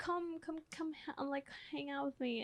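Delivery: put-on caring, coddling mother voice, high. Describing how mom acts, imitating mom's caring voice. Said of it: "the caring".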